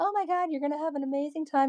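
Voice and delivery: overdone psychic-reader voice, high and gushing over the top. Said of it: "I'm not that girl. I'm not like".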